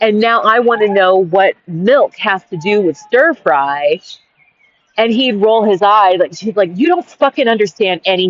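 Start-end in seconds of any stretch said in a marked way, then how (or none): 6.7-8.3 frustrated, exasperated man's retort. Retelling what a man said when frustrated with the speaker: imitating a frustrated man. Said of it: "And he'd get frustrated with me".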